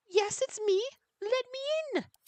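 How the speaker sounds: very high, squeaky, mousy little gnome voice. Playing a gnome bard in a game, the speaker answers in a gnome voice. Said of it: "I figured that's what a gnome would sound like".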